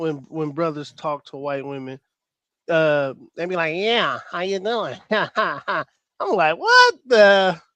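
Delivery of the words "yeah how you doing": put-on stuffy, runny-nose nasal voice. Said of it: "they talk like they got a uh, like a runny nose".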